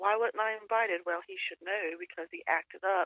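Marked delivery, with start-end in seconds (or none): none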